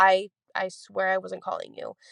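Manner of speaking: normal talking voice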